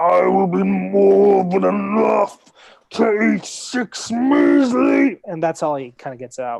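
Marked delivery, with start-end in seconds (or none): 0.0-5.2 loud giant voice, every word stretched very slow. Voicing a giant who is losing a fight and speaking Giant: Gundar's deep giant voice. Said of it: "the frequency at which they speak is so deep".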